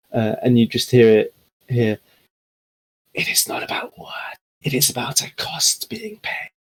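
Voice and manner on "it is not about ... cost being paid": hushed whisper that echoes around. Voicing a whisper that echoes around the towers: echoing whisper. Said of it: "now familiar whispering that echoes".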